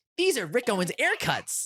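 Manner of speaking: put-on very high, swooping, hyped-up seller voice. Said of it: "more and more animated".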